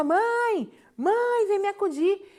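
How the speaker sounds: very slow, high, stretched-out, drawn-out yelling scream. The speaker retells calling her sleeping mother from downstairs, retelling screaming for her mother. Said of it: "E eu gritava".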